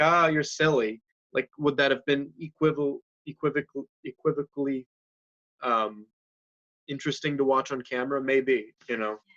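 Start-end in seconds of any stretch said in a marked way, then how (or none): 0.0-1.0 loud, scoffing, brushing-off tone. Showing another way to say a scene line: acting a scoffing line. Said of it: "if I said it kind of scoffingly".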